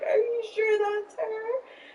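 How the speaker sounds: crying while speaking. Retelling asking a roommate if the dog is hers: imitating own past bawling. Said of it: "crying, bawling".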